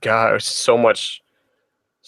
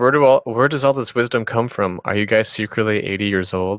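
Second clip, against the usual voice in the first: ordinary talk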